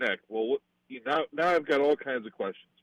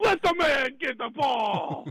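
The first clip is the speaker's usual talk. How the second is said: very high-pitched, slow, drawn-out screaming; 13 semitones higher than usual. Redoing a skit that begs for the ball: screaming like Chris Farley. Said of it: "you're screaming the, in, in, like Chris Farley".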